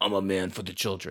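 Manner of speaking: menacing, threatening back-alley thug voice. Discussing a sword and sorcery flick, doing a menacing Lou Ferrigno impression. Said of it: "sounded like a guy in an alley is going to stab you".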